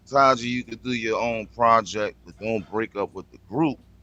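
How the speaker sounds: ordinary talk, nothing marked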